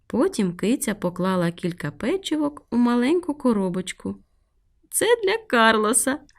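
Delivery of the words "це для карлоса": high, laughing voice. A cat packs cookies into a little box as a gift, laughing. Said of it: "засміялася вона".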